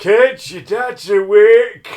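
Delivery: shrill, booming, high Yorkshire shout, awake drawn out. Imitating the other speaker calling the kids: imitating partner's yorkshire accent. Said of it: "That's what you sound like".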